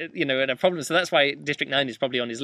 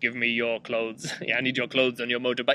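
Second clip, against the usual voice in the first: flat, level, robotic monotone like a machine; 3 semitones lower than usual. Explaining what robot impressions people reach for, doing a Terminator impression. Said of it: "if you're going to do an impression of a robot".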